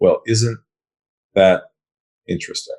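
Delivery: low, calm voice. Recounting a reply to a man at a big company, retelling in a lowered voice. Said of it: "lowered my voice".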